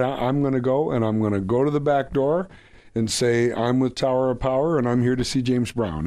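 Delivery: plain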